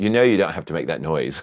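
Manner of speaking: put-on English accent, imitated. Retelling a man looking down at the speaker, imitating his English accent. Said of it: "his little inimitable um, English accent".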